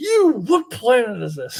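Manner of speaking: put-on wild, unhinged, high, swooping crazed yelling. Retelling an episode where a character yells at a homeless man, imitating McCoy yelling. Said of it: "he's yelling at this homeless man, like".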